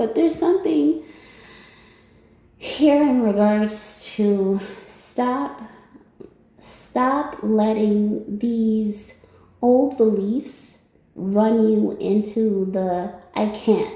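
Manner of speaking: slow speech, suppressing laughter mid-sentence. Speaker goes back to the point after apologizing: holding back a laugh. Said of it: "I'm trying not to laugh".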